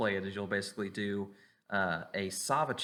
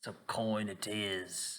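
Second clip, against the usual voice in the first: gruff, broad-shouldered dwarf character voice; 3 dB quieter than usual. Voicing a broad-shouldered dwarf challenging a player: broad-shouldered dwarf voice. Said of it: "He's like".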